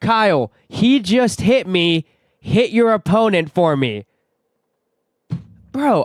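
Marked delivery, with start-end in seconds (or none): 0.0-4.0 loud, drawn-out scream. Retelling what mom screamed at him from the crowd: imitating mom screaming. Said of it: "she looks at me and screams".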